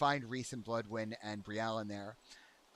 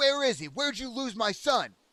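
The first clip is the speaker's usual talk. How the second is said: put-on very high, very loud, slurred drunken shout; 12 semitones higher, 9 dB louder than usual. Voicing a drunken father lunging for his daughter: drunken yelling. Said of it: "half drunkenly lunges for his daughter, and he yells out".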